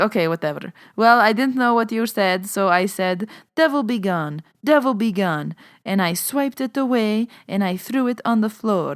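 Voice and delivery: put-on Lebanese old woman accent. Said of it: "I knew I said I wasn't gonna do the accent".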